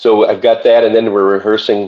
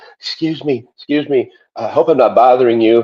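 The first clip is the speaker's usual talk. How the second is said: put-on thick Austrian accent, higher; 4 semitones higher than usual. Retelling a fan from Austria approaching in a restaurant: imitating a thick Austrian accent. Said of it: "had a very thick accent".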